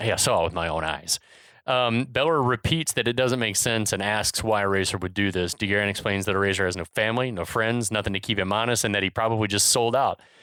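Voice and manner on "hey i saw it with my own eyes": low, serious, insistent voice. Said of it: "gets real serious".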